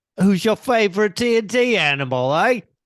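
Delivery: loud, high, put-on Australian accent. Repeating the host's question on request, in an australian accent. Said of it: "Repeat it in your best Australian accent".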